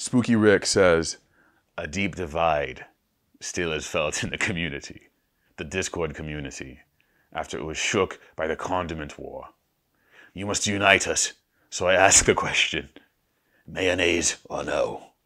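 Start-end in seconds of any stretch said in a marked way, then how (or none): 1.8-15.0 dramatic voice in the style of a fantasy epic. Reading a viewer's question aloud: Game of Thrones voice. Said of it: "That's my Game of Thrones voice".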